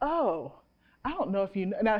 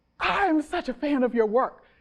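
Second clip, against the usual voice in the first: put-on gasping, much higher, slower; 5 semitones higher than usual. Retelling a stranger's reaction on hearing her name, imitating a gasping fan.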